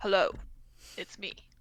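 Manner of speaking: very deep, disguised put-on voice. Speaking as the character Sunny, the player attempts a very deep voice. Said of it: "Sunny's gonna attempt a very deep voice".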